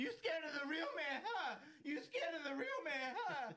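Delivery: put-on very high voice, cracking on verge of tears. Imitating a remembered interview line: voice cracking, about to cry. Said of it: "that voice crack".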